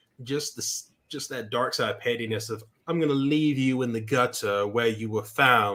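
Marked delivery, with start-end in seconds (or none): 2.9-5.8 put-on thick, elitist, upper-crust British accent, laid on heavily. Quoting the Grand Inquisitor's line: thick elitist British accent. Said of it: "with that thick elitist British accent".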